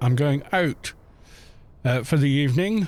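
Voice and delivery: ordinary talk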